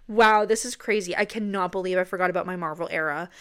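ordinary talk

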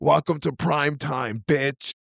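raspy menacing villain voice pushed from back of throat. Performing a line for a co-host during a conversation, in a Freddy voice. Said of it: "was that the Freddy voice".

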